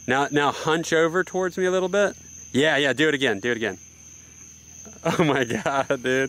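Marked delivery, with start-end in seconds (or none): 3.6-6.3 laughing while talking, slower. Directing someone to hunch toward him and reacting to their move, laughing.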